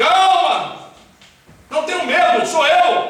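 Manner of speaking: high, loud, carrying call. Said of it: "E Jesus grita lá do meio".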